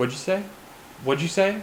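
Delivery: put-on acted, dazed, half-there, stoned-sounding spaced-out voice. Retelling asking a player to repeat in a loud room: imitating own past voice, sounding high. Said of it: "I sounded like I was high".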